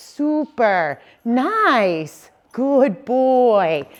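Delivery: every word drawn out very slowly. Speaker demonstrating praise bridge words, saying them long and stretched out. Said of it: "they're long and stretched out like a bridge".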